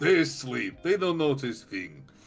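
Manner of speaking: put-on Russian squirrel voice. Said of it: "that's a strong Russian accent".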